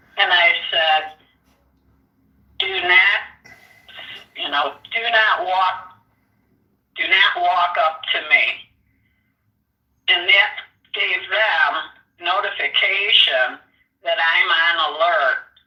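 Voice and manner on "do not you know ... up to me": male-style man voice. Retelling warning someone not to walk up, in a loud man voice. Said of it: "I used my my loud, loud man voice".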